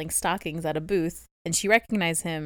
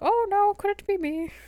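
put-on very high, drawn-out creepy old man voice. Recapping a story's plot, voicing the stocking seller in a creepy old man voice. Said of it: "These are all my grade voices".

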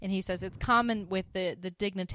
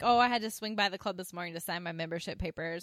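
plain

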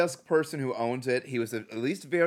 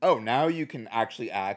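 ordinary talk, nothing marked

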